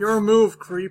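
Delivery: very loud, booming robotic cop voice. Prompting the other speaker to do the voice, delivering a line in RoboCop voice. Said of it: "Just do the voice".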